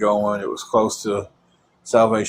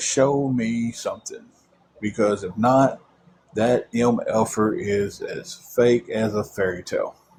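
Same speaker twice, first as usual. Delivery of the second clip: plain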